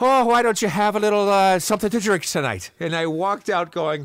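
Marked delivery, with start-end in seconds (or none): 0.0-2.7 put-on Irish accent, high and raised. Reenacting what a guy said to the speaker: imitating an irish accent. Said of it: "he's Irish".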